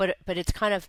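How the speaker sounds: ordinary talk, nothing marked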